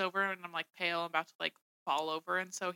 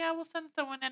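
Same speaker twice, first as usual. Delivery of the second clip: super chill, laid-back, unbothered, soft and high; 9 semitones higher, 6 dB quieter than usual. Retelling how staff answered a call for urgent help, imitating a super chill tone. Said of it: "being like super chill".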